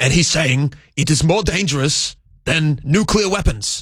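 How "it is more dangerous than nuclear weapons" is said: impression of an old politician's voice. Telling another speaker about an interview clip, Bernie Sanders impression. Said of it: "Pretty good impression".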